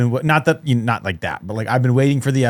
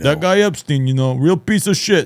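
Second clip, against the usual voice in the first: tough-guy street palooka voice; 4 semitones higher than usual. Imitating Dan Bongino as the speaker imagines him: Dan Bongino sounding like Rocky Balboa. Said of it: "I would imagine he sounds like kinda probably like Rocky Balboa".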